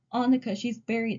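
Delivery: ordinary talk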